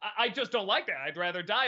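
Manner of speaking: ordinary talk, nothing marked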